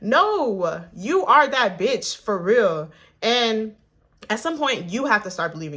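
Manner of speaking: forceful, insistent, aggressive, slow and drawn-out. Urging listeners to believe compliments they get: aggressive. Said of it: "I'm getting real aggressive with you".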